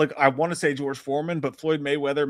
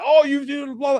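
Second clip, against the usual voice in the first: acted yelling, pitched very high, shrill; 13 semitones higher, 6 dB louder than usual. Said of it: "she was yelling".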